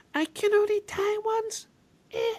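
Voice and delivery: very high, drawn-out cutesy voice. Imitating a game fighter's defeat line: imitating Terra's cutesy voice. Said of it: "doing her lolly voice".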